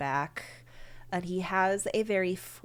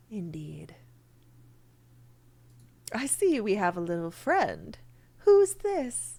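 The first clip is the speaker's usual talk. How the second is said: very smooth, silky, raised, swooping, animated voice; 4 semitones higher, 5 dB louder than usual. Voicing Mister Weathervane in a told scene: Mister Weathervane's silky voice. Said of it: "You hear a very silky smooth voice".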